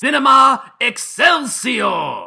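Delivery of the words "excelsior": shrill, very high, booming exclamation with gusto. Redoing a show title after being asked to honor the word: stress on EXCELSIOR. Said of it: "Just be true to the word Excelsior".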